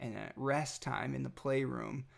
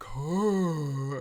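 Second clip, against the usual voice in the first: put-on louder little baby voice. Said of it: "in your little baby voice".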